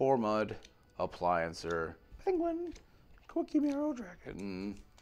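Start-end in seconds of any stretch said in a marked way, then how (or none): 2.3-4.8 goofy, silly, very high put-on voice. Calling out card names one by one, giving each one a put-on voice. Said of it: "I don't know why I make the voice".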